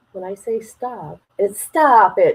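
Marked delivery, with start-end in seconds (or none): 1.6-2.4 attempted Boston accent, louder. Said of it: "talk in an accent of people in Boston".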